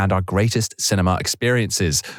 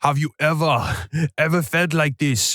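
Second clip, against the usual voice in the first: put-on Austrian action-star accent, pitched up; 7 semitones higher than usual.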